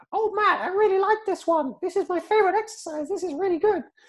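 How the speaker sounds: very high, put-on cartoon frog voice. Quoting the Frog praising bench press, in a Kermit the Frog voice. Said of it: "I can't do Kermit the Frog, so I'm gonna try".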